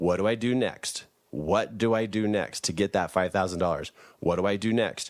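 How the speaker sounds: ordinary talk, nothing marked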